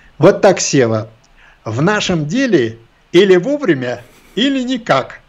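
high, trained, drilled commanding officer voice. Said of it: "поставленным командирским голосом говорит".

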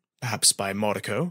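ordinary delivery, nothing marked

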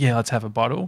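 ordinary delivery

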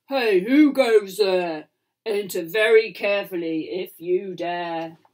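deep, gruff, slow, drawn-out growling giant voice. Reading a bedtime story, a giant challenges the approaching pirates in a growling giant voice. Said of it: "growled a giant. / Cried the giant as he splashed across the stream. / growled a giant".

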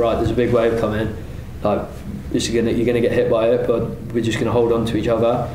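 plain

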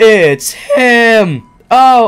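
very loud cracking yell, "him" drawn out. Playing through a hospital scene and reaching the reveal, voice cracking. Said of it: "I made a voice crack".

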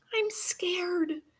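soft whisper, pitched very high. Marie speaks to the narrator, who hushes her right after; whispered. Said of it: "whispered Marie".

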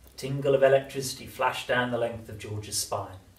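ordinary delivery

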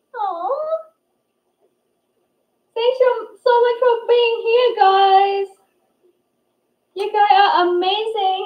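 almost crying with happiness. Streamer thanking viewers for being there, almost crying with happiness. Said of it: "I'm almost crying".

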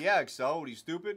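plain

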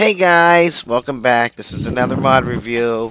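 put-on teasing, old-school hey-guys youtuber intro voice. A streamer mimics an old-school YouTuber intro, mocking someone's voice. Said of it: "I'm just making fun of your voice".

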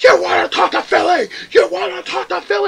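enraged repeated yelling, rough-edged and high-pitched. Recounting a guy who got so mad at the speaker, retelling a furious yell. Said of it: "he starts yelling".

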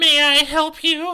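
high falsetto voice. Reading a character's line aloud from a story: falsetto voice. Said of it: "this is the falsetto voice you get".

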